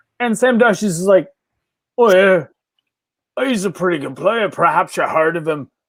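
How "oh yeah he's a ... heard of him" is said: casual, offhand delivery in a put-on Irish accent. Retelling a manager answering an interview question: Sean Dyche Irish accent. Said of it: "Sam Dyche is a better Irish accent than his Roy Keane".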